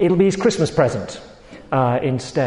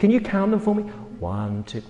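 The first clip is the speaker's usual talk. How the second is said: mock condescending, patronizing, talking-down voice, high; 6 semitones higher, 3 dB quieter than usual. Speaking to 75-year-old Abram outside under the stars, in a mock-patronizing tone. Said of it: "I'm a little patronizing my tone to you".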